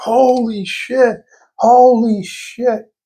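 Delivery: screaming outburst. Retelling a big win at the casino, imitating a guy screaming. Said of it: "This guy was screaming like".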